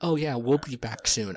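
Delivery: put-on narrator voice. Retelling a scene where a dad answers his child: Ron Howard voice. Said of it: "that's the Ron Howard voice".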